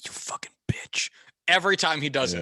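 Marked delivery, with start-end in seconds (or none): 0.0-1.1 mock muttering under breath, cursing. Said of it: "saying under his breath".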